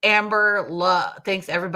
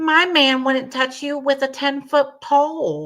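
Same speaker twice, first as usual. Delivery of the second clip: high-pitched dismissive voice, word pole drawn out; 8 semitones higher than usual.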